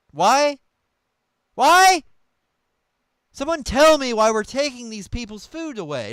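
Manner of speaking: loud, exasperated, fed-up yell. Talking about Gaza while watching, suddenly yelling. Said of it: "Why are you yelling?".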